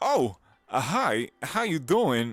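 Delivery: very loud, very slow, booming delivery. Imitating an eager beginner showing off a Christopher Walken impression. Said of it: "here's my Christopher Walken".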